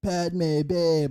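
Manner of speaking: laid-back beach surfer-dude voice. Mocking how Anakin talks to Padme: Anakin surfer guy voice. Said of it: "Just go for it, surfer guy".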